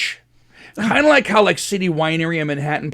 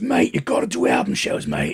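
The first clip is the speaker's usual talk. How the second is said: pissed-off, annoyed, insistent action-hero tough-guy delivery; 14 semitones lower, 3 dB quieter than usual. Retelling how Elio pushed for album shows: imitating Elio, Jason Statham-like and pissed. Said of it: "he gets a Jason Statham thing going on where he sounds pissed".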